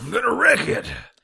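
very high, loud, cartoon-style shout. Trying out a John C. Reilly as Wreck-It Ralph impression. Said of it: "I cannot do a John C. Reilly as Wreck-It Ralph impression".

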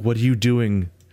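put-on frustrated tone. Retelling own reply to a player arguing against everything: retelling a frustrated question. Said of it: "I was so frustrated".

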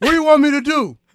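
loud, high-pitched mocking impression. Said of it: "He talks like this the whole time".

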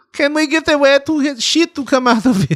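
horrible fake German accent, very high-pitched. Joking after news that germany is buying the device, the speaker does a horrible german accent. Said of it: "that was a horrible German accent".

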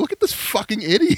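very high, words laughed out like a maniac. Retelling mocking a bad driver while taking his picture; retelling laughing like a madman. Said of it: "i'm just like laughing like a madman".

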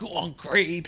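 half-shouted whisper. Recalling a boxer's moment in a film's final fight scene: retelling a shout-whisper. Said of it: "shouted like a shout whisper under his breath".

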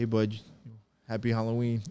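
plain

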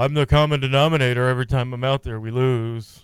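put-on gloomy donkey voice. Mocking a player's quote about always losing, gloomy Eeyore voice. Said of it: "Is he Eeyore?".

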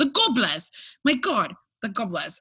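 clumsy, bad, fake British accent. Mid-scene, the speaker delivers a line in a bad British accent. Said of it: "Anyone British? I'm so sorry".

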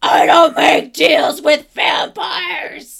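very loud, high, throat-tearing gravelly scream. Narrating a game scene, the storyteller voices Connor screaming as Stefan reasons with him. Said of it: "Connor screams".

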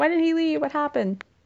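high, distraught, lovesick heroine voice. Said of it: "she's like".

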